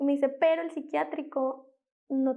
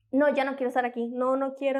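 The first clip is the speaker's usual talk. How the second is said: normal talking voice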